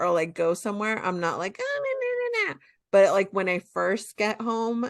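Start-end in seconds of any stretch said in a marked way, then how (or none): 1.6-2.6 put-on very high-pitched, squeaky baby talk. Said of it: "in a baby wa-".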